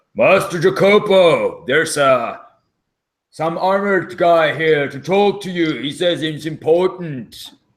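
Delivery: booming, loud, high-pitched call. Narrating a scene, a character bangs on a door and calls to master jacopo, booming, really loud voice. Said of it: "His voice booms out really loud".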